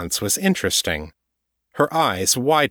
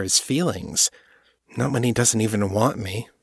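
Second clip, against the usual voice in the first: ordinary delivery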